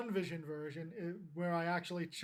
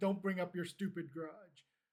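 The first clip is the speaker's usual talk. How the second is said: ordinary delivery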